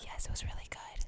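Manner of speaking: soft, breathy, unvoiced ASMR whisper. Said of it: "should we do A S M R?".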